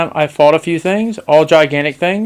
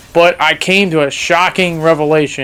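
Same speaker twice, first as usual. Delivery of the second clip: plain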